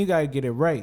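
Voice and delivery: ordinary talk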